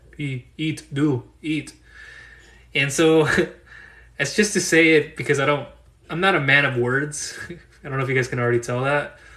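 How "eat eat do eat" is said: caveman speech, much slower. Mocking his own terse wording by imitating a caveman: caveman talk. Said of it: "I sound like a caveman".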